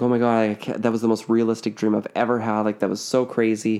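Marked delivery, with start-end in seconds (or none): none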